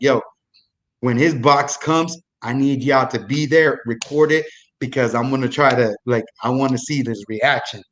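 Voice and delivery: ordinary talk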